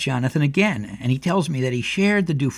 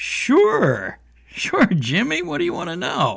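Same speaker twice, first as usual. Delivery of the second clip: play-acted, big hearty tone, very high, swooping; 13 semitones higher than usual. Retelling answering Jimmy at the kitchen table, a put-on hearty reply. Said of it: "I fired back a hearty".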